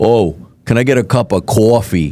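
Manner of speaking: exaggerated put-on thick, heavy New York accent. Denying having such a strong accent, in an exaggerated thick new york accent. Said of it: "I was never like that bad".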